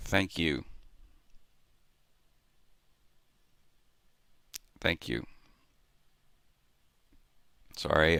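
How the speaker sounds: voice choked, fighting back tears. Thanking a commenter after reading their supportive message: holding back tears. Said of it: "I'm trying not to tear up".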